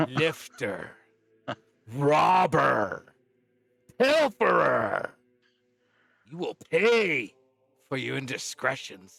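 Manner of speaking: loud, wrathful, furious dragon voice. Game master voicing a green dragon whose things were stolen: angry dragon. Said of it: "we've pissed off a green dragon".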